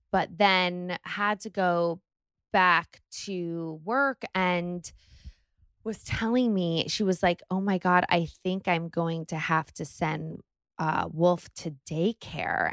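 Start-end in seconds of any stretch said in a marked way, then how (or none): 7.5-12.7 mock tearful speech, as if tearing up. Retelling what her sister said about going back to work, imitating her tearing up. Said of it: "and like started tearing up".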